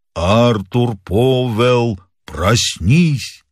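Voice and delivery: muffled, hollow, sepulchral ghost voice. Narrator reading a ghostly figure calling to an old man in bed: hollow sepulchral voice. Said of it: "сказала глухим замогильным голосом".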